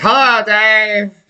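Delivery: put-on high old man voice. Imitating the old man from a talk show greeting the host: imitating an old man. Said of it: "Remember the old man on David Letterman?".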